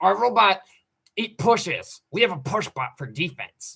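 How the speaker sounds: high-pitched mocking put-on voice. Retelling what a robotics teammate said, imitating a teammate's voice. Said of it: "in that voice".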